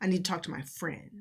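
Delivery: ordinary delivery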